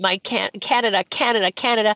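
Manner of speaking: normal talking voice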